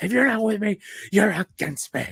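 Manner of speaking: play-acted shrill screaming outburst, very high. Quoting a film scene to friends: imitating Anakin screaming. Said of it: "he's just, like, screaming and shouting".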